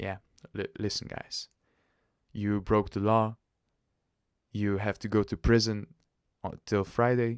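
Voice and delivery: ordinary talk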